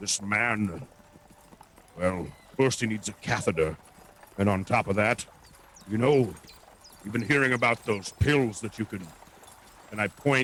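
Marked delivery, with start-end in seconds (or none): 0.0-9.1 whispering, lower. Leaning close to a guard so no one else hears: whispering to the guard. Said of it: "And I whisper to him".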